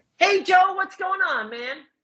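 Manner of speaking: very high-pitched, slow cartoon voice. Greeting the interviewer in character after being asked: Sonic voice. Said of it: "I'll do Sonic's voice".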